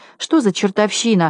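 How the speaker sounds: plain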